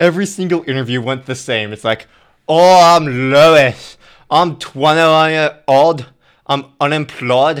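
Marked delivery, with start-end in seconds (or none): 2.5-7.6 put-on awful British accent, very slow and loud. Imitating the guys from every interview on the show: worst british accent. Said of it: "Your British accent is the worst British accent I've ever heard".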